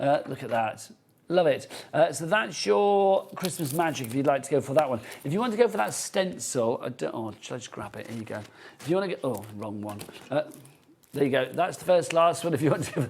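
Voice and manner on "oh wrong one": audibly disappointed, let down and deflated. Picking up the wrong stamp while presenting: disappointed. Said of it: "You can hear my disappointment there".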